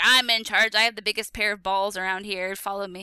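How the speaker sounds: cocky, boastful, big-shot swagger. Imagining how a group member sees himself: imitating Michael as a boastful alpha male. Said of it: "do you think he's like".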